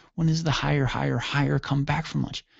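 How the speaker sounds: ordinary talk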